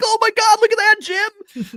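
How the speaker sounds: very high-pitched, very loud yell. Retelling own yelling while watching a truck race: yelling like Tony Romo. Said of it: "I sound like Tony Romo".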